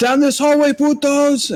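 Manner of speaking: shouting character voice. Simone points down the hallway, calling out the drow's location: yelling as Simone. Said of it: "And I'm gonna yell and point".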